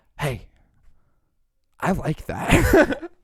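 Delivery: very slow, drawn-out, bedroom-sultry voice. Teasing another speaker about their voice in bed, imitating a sultry voice. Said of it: "you made your voice sultry".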